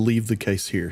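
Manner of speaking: plain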